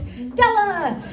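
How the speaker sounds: high, drawn-out emcee-style call.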